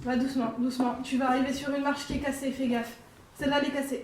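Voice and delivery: loud reassuring call.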